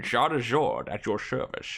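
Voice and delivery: spoken in a put-on Scottish accent. Speaker reads a character's greeting aloud, trying a Connery-esque Scottish accent. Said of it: "How do you do it with an accent?".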